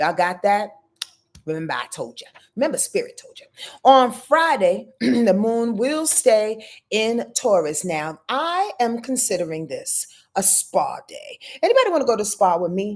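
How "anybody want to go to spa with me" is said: very fast, rapid-fire, rattled-off throwaway delivery. Speaker addressing the audience, rattling it off very fast. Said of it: "I said that real fast".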